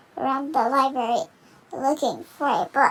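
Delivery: ordinary delivery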